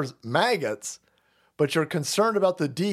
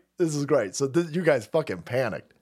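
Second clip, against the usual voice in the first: ordinary talk, nothing marked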